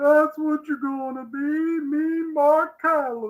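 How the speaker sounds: put-on high, slow drawl, word stretched out slowly.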